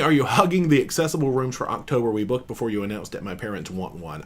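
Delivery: ordinary delivery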